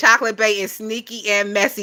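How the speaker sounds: usual speaking voice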